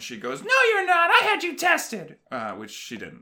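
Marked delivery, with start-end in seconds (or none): 0.4-2.2 acted, very high-pitched, defensive voice. Retelling how the mom answers the speaker: imitating a defensive mom. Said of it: "she gets real defensive".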